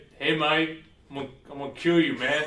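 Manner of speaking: loud, high-pitched, badly done put-on thug voice. Retelling what the game character says before the fight: bad Westrich impression. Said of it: "That's a really bad Westrich".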